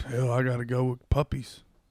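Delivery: macho gym guy character voice. Answering rapid-fire questions after being asked to stay in character: gym bro character voice. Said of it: "please answer it in this character".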